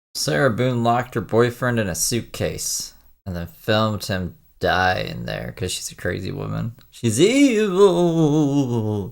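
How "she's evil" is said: would-be serious spooky voice, loud, evil, drawn out. Recounting a crime story, saying one line in a spooky voice. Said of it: "that's supposed to be my serious spooky voice".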